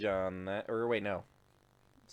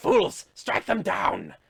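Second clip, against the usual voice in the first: high, loud commanding yell. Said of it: "it yells out".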